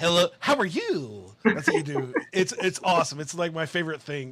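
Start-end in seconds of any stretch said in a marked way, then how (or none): 0.0-1.3 put-on slow, unhurried kid voice. Showing the voice used when talking to children in videos: kid voice. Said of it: "I do love your kid voice that you have".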